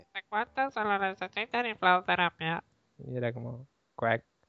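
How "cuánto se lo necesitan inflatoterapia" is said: tiny put-on voice, much higher. Quoting a line remembered from the spanish version, little voice from spanish version. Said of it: "la vocecita en español".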